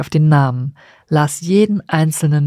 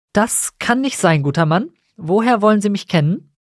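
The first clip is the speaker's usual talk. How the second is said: slightly indignant, controlled, measured, pitched up; 5 semitones higher than usual. Gathering his courage, August answers the coachman who claims to know him; a measured touch of indignation. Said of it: "mit einer wohldosierten Spur Entrüstung in der Stimme".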